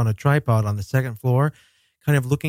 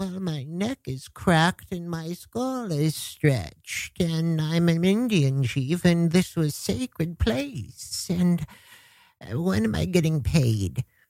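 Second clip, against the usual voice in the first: put-on soft, high old woman voice; 5 semitones higher, 5 dB quieter than usual. Quoting a woman heard on a recording, imitating an old woman's voice. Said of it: "she sounds like an old woman".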